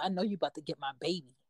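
under-the-breath mutter. Retelling how a girl, told by her mom to get out, mutters under her breath. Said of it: "you hear like under her breath".

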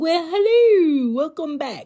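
shrill, very loud, high, belted character voice. Welcoming listeners back to the podcast: Mrs. Doubtfire voice. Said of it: "I had to put on my, um, Miss Doubtfire".

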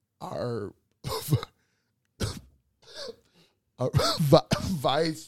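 laughing while talking. Naming someone while trying not to laugh: laughing while talking. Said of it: "I'm trying to say it without laughing".

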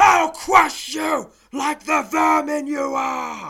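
booming, very loud, high-pitched enraged roar. Narrating a fantasy adventure, an angry voice from a cave threatens the heroes: angry bellow. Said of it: "bellows an angry voice".

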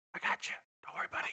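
soft, unvoiced whisper with barely any voice.

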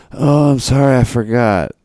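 mock drowsy, slow, groggy, half-asleep stupor voice. Retelling a mother's reply when woken early: imitating someone in a sleepy stupor. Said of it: "in a sleepy stupor".

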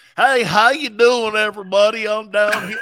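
loud, fake Cajun accent. Mocking a coach's sudden fake accent: imitating Brian Kelly's fake Cajun accent. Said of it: "where did you get that Cajun accent from".

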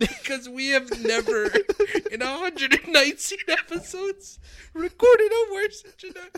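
laughing to tears. Co-host reacting to a badly recorded episode introduction, laughing to tears. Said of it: "because I have tears in my eyes".

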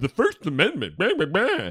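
scornful, swooping, derisive sing-song mocking tone. Mimicking people who always bring up the First Amendment, in a mocking imitation. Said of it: "speak about the First Amendment in a mocking tone".

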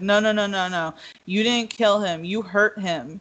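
ordinary talk

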